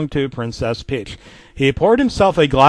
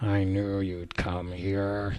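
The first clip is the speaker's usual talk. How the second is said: icy, cold, dark, very low, hushed murmur; 7 semitones lower, 12 dB quieter than usual. Narrating a story, the manager speaks to the narrator in the back room: cold, dark voice. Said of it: "the manager said in a cold, dark voice".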